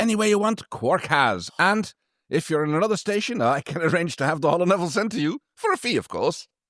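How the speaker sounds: put-on authentic-sounding Irish accent. Performing a bit for a listener who loves the voice, in an Irish accent. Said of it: "best authentic Irish accent".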